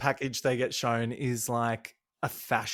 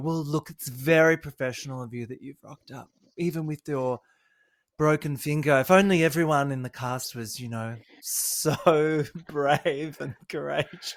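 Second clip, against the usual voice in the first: put-on campy, mock-sincere voice. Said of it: "surely he's playing it up in camp".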